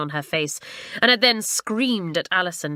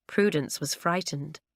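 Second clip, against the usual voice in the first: usual speaking voice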